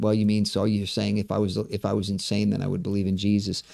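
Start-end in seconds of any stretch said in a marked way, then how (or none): none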